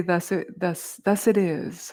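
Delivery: ordinary talk, nothing marked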